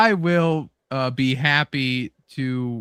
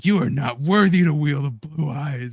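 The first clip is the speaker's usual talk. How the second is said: angry, pissed-off tone; 2 semitones higher than usual. Retelling how Kaiba reacts when Joey steals Blue Eyes: imitating Kaiba getting pissed. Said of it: "he just gets so pissed".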